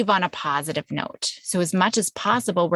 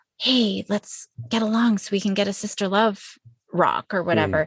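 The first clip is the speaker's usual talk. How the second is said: whisper in put-on child voice. Retelling what the two sisters whispered to each other: imitating kids whispering. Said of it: "you could even hear them whispering".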